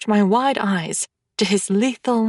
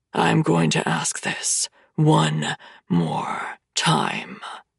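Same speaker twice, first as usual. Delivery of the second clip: hushed, quiet, deep, rough rasping rumble; 5 semitones lower, 3 dB quieter than usual. A narrator reads a man speaking close to the narrator's ears, quiet deep rasping rumble. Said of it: "he rumbles quietly, his deep, rasping voice".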